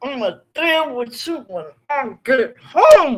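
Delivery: angry words spoken through gritted teeth. Recalling a phone call, the speaker repeats the mother's threat: imitating talking through clenched teeth. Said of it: "clench her teeth together and talk through her teeth because she was so mad".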